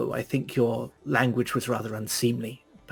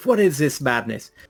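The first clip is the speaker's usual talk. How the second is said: abrupt sharp shouting; 4 dB louder than usual. Baldwin walks in on a fight as someone gathers herself to dive: Baldwin shouting. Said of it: "there's a shout from Baldwin".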